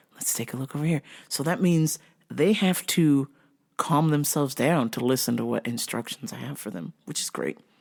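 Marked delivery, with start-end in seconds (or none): 0.2-1.0 soft, hushed customer-service voice. Retelling helping an upset customer: retelling own soft-spoken voice. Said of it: "I just kept talking softer and softer".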